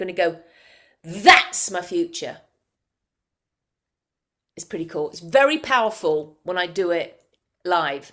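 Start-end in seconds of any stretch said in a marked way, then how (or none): 1.0-2.4 loud shouted call, louder. Leading a group exercise, showing them how to say it: shouting. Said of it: "I want you all to shout it out".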